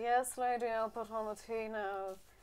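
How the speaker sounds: soft, flat, bone-tired, exhausted monotone. Voicing a butler who answers the lady about tea: exhausted butler voice. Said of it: "he looks like the most tired person in the entire universe".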